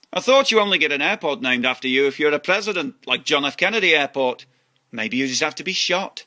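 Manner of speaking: plain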